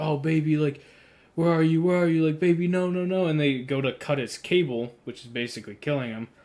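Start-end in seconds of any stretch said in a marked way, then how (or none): 0.0-3.3 put-on loud, high, monotone robot screaming and pleading. Speaker recounts a robot found trapped in a wrecked car, retelling its screaming. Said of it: "it's screaming like".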